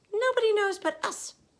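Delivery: squeaked, high and a bit loud. Narrator reads the Magical Mouse's line in the story, in a squeaky Magical Mouse voice. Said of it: "came a squeaky voice".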